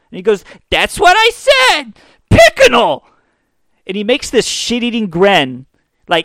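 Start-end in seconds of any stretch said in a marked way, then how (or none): 0.7-3.0 put-on very high little-kid voice, swooping and drawn out. Retelling what a kid on a tv show said, high little kid voice. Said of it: "one of these shitty little kids on there with the high voices".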